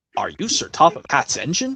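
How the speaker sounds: ordinary talk, nothing marked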